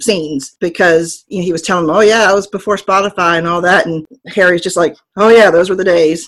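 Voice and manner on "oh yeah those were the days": put-on deadpan, louder. Describing a TV scene, the speaker quotes Harry's reply, imitating Harry's deadpan.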